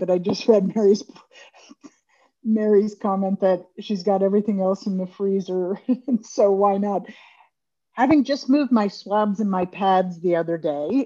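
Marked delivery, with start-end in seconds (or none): 0.0-7.1 words broken up while talking through laughter. Speaker reacting to a comment from a commenter: laughing while talking. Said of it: "I'm laughing".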